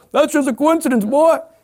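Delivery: high, loud, mocking, scoffing skeptic voice.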